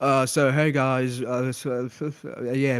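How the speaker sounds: flat, very slow, drawn-out lifeless drone. Mocking how Cheeto sounds, boring and dead: Cheeto impression, flat and dead. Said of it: "Cheeto just sounds dead. I don't know. He's just like".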